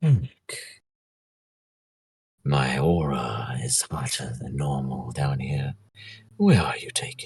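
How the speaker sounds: partly whispered voice. A familiar voice half-whispers to Eric in a hot breeze, Aura half-whispering. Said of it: "a familiar voice whisper by you".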